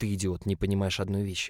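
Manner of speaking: ordinary delivery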